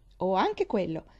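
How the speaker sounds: cheerful tone. Reading a young girl replying to a woman she brought food, happy. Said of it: "Disse Pollyanna felice".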